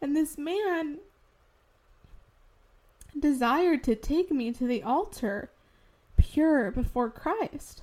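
fighting back tears, holding back crying. Speaking about the man God brought into her life, fighting back tears. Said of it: "I'm trying to fight these tears".

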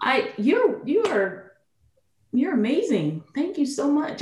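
teary, moved voice, tearing up mid-line. Thanking someone who offered to carry their bags and introduce them, tearing up. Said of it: "I don't even know why I'm tearing up".

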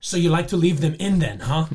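put-on Russian accent, loud. Retelling a woman's reply to a man's answer, in a Russian accent. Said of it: "with her russian accent she's like".

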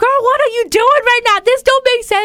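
very high-pitched, loud yelling. A J-Lo superfan recalls her reaction to something she disliked, retelling a yell. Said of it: "I was yelling".

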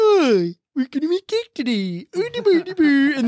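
swooping, high, sing-song put-on Swedish accent. Act out a weird guy painted up behind a table, in a Swedish Chef voice. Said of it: "painted like Swedish chef is sitting out there behind a table going".

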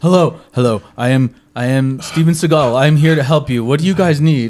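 put-on breathless voice. Imitating a scene from a reality show, sounding out of breath. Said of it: "he sounded like he was out of breath".

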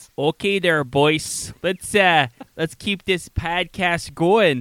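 slow Chicago drawl. Asked on the podcast to hear it, do your best Dave Maurice impression, Chicago accent. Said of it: "That's my best Chicago".

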